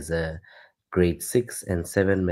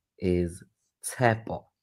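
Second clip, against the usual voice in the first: very slow, deliberate, pitched-up delivery. Asked how to pronounce his name, speaker says it very slowly. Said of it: "I'm gonna try and say it as slow as I can".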